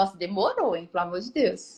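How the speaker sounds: put-on ironic, needling sarcastic tone. Acting out a remark to the husband: imitating own sarcastic remark. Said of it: "é muito fácil eu virar pro meu marido e falar assim".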